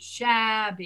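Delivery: "shabby" said with open jaw. Showing a learner the corrected word: saying shabby with dropped jaw. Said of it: "drop your jaw more".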